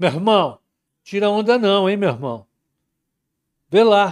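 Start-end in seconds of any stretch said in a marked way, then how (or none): 0.0-2.5 put-on Carioca accent. Joking with Tec about snow in Rio, put-on Carioca accent. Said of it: "Carioca, né? Meu carioquês tá bom".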